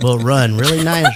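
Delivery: put-on laid-back drawl. Doing a radio ad for Reliant Energy the way Matthew McConaughey talks: Matthew McConaughey impression. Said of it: "That's how Matthew McConaughey talks".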